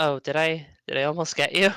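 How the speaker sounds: softened, gentler voice. In an actual-play scene, a character who just threw fire, softened voice. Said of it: "she softens for a second and says".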